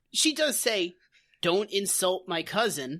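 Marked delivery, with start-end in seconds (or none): none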